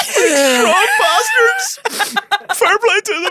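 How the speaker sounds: excited yelling.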